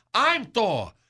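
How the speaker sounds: plain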